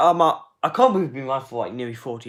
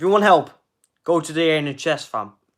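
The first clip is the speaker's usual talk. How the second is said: ordinary talk, nothing marked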